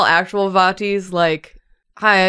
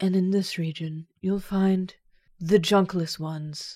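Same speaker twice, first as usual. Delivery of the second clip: super nice, friendly voice, as sweet as possible; 8 dB quieter than usual. Imitating a video narrator describing a region: Vati's super nice voice. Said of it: "in his super nice voice being like".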